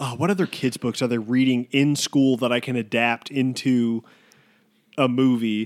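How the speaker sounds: ordinary talk, nothing marked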